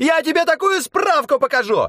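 shrill, squealing, very high squeaky shriek. Narrator reads a small official yelling while kicking at the train driver: squeaky shriek. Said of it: "пискляво вопил один из чиновников".

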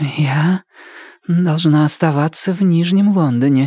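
voice trembling and quavering with nerves. A usually composed huntress answers her companions with a trembling voice. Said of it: "Ее голос дрожал".

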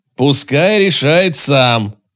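sharp, snapping, shouted yell. A man cuts in during a group discussion with the commander, shouting at someone. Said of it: "Олегу пришлось прикрикнуть".

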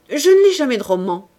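clipped, dry delivery. Rougon answers the minister who has just interrupted him; curt. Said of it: "déclara sèchement Rougon".

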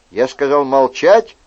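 plain

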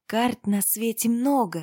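ordinary delivery

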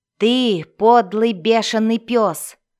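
loud, explosive, sudden furious outburst. Mocked by a laughing sorcerer, a companion hurls an insult, exploding in rage. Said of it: "взорвался Глинсатор".

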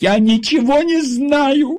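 very high shrill shout with знаю stretched long. Ella, pressed by a security officer, shouts at her visitor. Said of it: "крикнула Элла".

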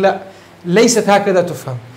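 ordinary delivery

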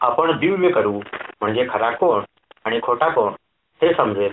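ordinary delivery

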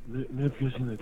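soft, fake, groggy, just-woken-up voice. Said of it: "αυτό κάνει τον αγουροξυπνημένο".

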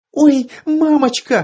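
very high-pitched, shrill squeal. A narrator voices a girl reacting to a man's gruesome injuries, with a shrill squeal. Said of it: "взвизгнула Танька".

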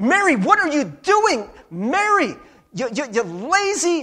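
high-pitched, loud, exasperated scolding tone. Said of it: "this is what Martha's thinking".

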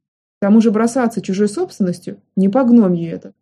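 ordinary delivery

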